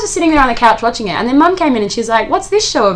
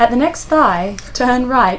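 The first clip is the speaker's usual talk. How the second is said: sultry navigation device voice. Friends joking about a GPS, mimicking its directions in a sexy GPS voice.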